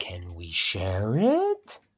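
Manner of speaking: rising question-like tune on share it. Reading a story aloud after spotting the question mark, questioning intonation. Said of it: "we'll say that like a question".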